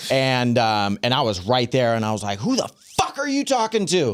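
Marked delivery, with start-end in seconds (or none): 2.4-4.2 mock, very high, shrill, swooping, all-out screaming. Retelling bursting into a school at a teacher: imitating himself screaming. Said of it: "screaming at this teacher".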